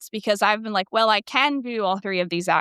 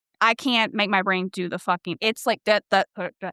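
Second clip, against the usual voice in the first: ordinary talk, nothing marked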